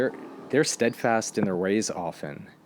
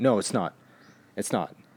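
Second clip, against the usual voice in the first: put-on stubborn, defiant, adamant tone. Retelling an argument over a word, imitating an adamant denial. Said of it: "And she was so adamant".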